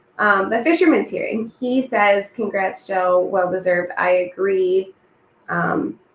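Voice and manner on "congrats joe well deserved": plain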